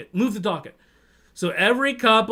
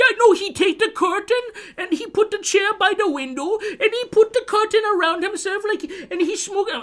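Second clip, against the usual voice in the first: put-on very high wailing, crying, bawling sob; 12 semitones higher than usual. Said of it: "just bawling and crying".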